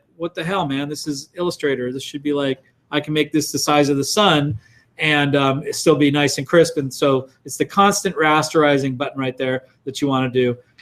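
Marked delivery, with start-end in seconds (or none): none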